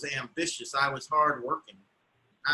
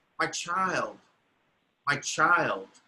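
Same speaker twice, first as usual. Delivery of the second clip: slow mutter broken by helpless sighs. Retelling what the woman kept muttering, imitating her uncontrollable sighing. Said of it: "She just kept sighing uncontrollably".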